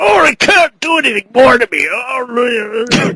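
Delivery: very slow, beaten-down, tortured little robot voice. Acting out a little Transformer robot who has been tortured: imitating a tortured little robot. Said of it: "this little Transformer who's like a robot".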